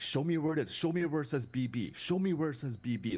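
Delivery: acted insistent arguing. Retelling what they said while arguing the point, acting out a heated argument. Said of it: "Like arguing that point".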